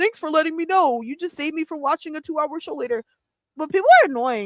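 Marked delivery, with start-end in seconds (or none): 0.0-3.0 mock sarcastic tone, pitched higher. Retelling own reply to a comment: imitating own sarcastic reply. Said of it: "Sometimes I'm sarcastic".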